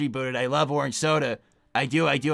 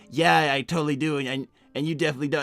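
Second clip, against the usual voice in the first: ordinary talk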